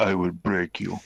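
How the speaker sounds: put-on deep Russian voice. Imitating a woman being discussed, deep Russian accent. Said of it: "deep Russian thing going on".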